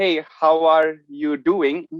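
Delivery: slow, unhurried delivery.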